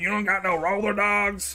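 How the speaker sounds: mock angry outburst. Retelling a TikTok interview with a trucker: imitating a trucker getting mad. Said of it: "And then he gets real mad".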